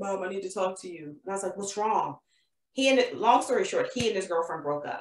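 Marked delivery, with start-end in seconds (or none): 0.0-1.0 put-on audibly upset voice, much quieter. Retelling her son's call from four hours away, imitating her upset son. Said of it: "you can hear he's upset".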